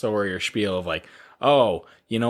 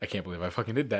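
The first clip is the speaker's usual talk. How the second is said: fast, put-on panicked disbelief tumbling out; 2 semitones lower, 9 dB quieter than usual. Retelling a movie scene where a character panics: imitating someone freaking out. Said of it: "freaking out".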